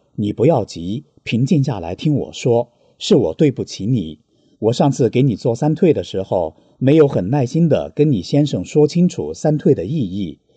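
normal talking voice

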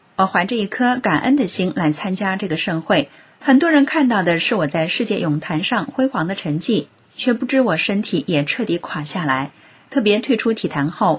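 ordinary talk, nothing marked

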